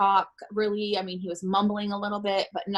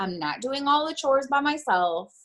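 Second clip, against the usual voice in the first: high, rising, fed-up irritated tone; 5 semitones higher than usual. Retelling what her older son said on a phone call: imitating an irritated son. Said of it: "he was irritated 'cause he's like".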